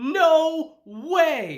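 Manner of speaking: high, loud, blurted stunned disbelief.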